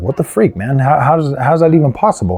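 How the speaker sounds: ordinary talk, nothing marked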